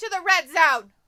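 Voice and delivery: very loud, full-throated, high-pitched yell. Showing how loud the voice gets when turned up: yelling. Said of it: "Okay, yeller".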